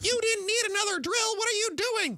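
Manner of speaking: put-on very high-pitched, granny-style grandmotherly voice. Complaining that Mrs. Merrill disapproves of the speaker's spending, imitating Mrs. Merrill. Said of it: "She turns sounds like my grandmother".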